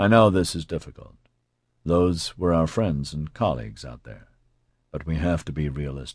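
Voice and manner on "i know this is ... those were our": usual speaking voice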